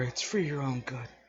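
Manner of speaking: hushed voice. Voicing a father whispering to the young man under the floor: whispering.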